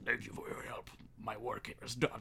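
fast, deep, hushed near-whisper. Listing favorite characters, quoting the masked ally: Dr. Deep Voice impression. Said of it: "Dr. Deep Voice, who's like".

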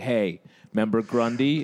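put-on ice-cold, icy delivery. Retelling what a teacher said in school: imitating an ice-cold teacher. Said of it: "ice cold is like".

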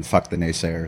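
usual speaking voice

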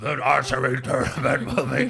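put-on gravelly low crocodile voice. Imitating the crocodile announcer calling out news: Admiral Ackbar voice. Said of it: "he was like Admiral Akbar".

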